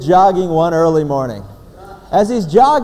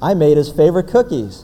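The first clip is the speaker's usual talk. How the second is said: ordinary talk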